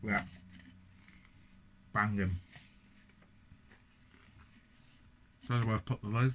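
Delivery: speaking with mouth full, chewing. Reviewing a beer while eating Pringles, speaking with mouth full. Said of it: "Speaking with my mouth full".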